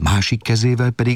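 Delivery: ordinary delivery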